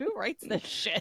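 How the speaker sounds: whispered, hushed, breathy mutter under the breath. Retelling what the announcer says under his breath: imitating Neil muttering. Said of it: "he mutters because".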